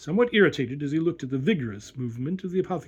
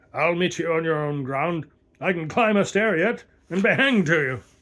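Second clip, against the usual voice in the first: growled, gruff, rough-toned words; 3 dB louder than usual. Reading a story, the narrator voices the colonel answering the doctor, growling. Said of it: "growled the colonel".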